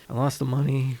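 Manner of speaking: soft, low mumble, words barely getting out. Retelling what Billy said in the chair as she tried things: imitating someone mumbling. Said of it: "he's kind of mumbling like".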